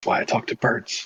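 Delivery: muttered whisper under breath. Muttering a remark in character during a conversation: whispering under breath. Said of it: "Quinner just whispers under his breath".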